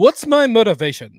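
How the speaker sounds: grand, loud, high, projected thespian delivery. Retelling how a cartoon plays Clayface: Clayface as thespian actor. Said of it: "a thespian actor".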